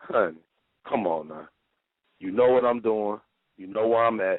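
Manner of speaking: play-acted very low, murderous, menacing voice. Speaker retells what she says to a caller who keeps phoning, retelling a murderous tone. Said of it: "I might sound like I'm about to kill her".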